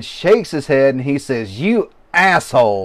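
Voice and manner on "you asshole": loud, booming shout at full blast. Retelling a laughing outburst in the middle of the ring: imitating a loud shout. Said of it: "louder than hell".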